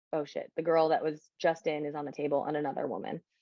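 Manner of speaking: usual speaking voice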